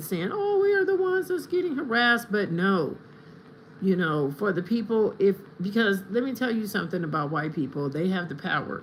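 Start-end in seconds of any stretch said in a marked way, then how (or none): 0.3-2.3 high-pitched, mild, squeaky mocking yell. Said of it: "they're always yelling, saying".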